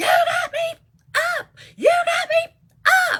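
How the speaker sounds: very high, shrill screaming outburst. Telling a story about a girl suddenly screaming in a building, imitating her screaming.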